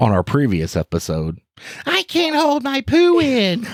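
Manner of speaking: very high, sing-song, swooping TV voice. Opening a bit for the show, imitating the co-host's television voice. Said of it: "That's your voice. Sounded just like me".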